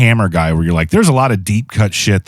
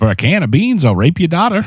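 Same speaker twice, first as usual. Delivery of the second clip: very high, put-on hobo voice; 9 semitones higher than usual. Joking about a Doctor Who actor who dressed like a hobo: hobo impression. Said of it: "I was just doing an impression of a hobo".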